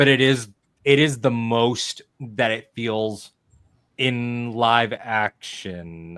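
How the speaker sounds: slow, careful, measured and deliberate delivery. Speaker describing Yoda's fight in live action, speaking slowly, carefully. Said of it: "I'm saying it slowly".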